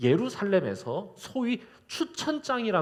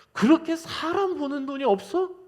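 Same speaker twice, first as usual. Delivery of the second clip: put-on very high, wounded, resentful complaining tone; 9 semitones higher than usual. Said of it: "너무 야속한 거야".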